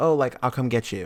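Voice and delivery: ordinary talk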